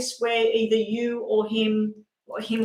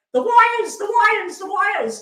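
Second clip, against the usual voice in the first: mock very high, loud, repeated screaming; 11 semitones higher, 5 dB louder than usual. Retelling what they screamed at the driver while the drone followed, acting out a scream. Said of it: "I'm screaming at him saying".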